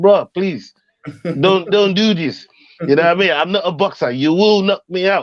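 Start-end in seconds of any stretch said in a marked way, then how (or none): 0.0-2.5 slow, drawn-out, pleading begging. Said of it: "I had to beg for his chin".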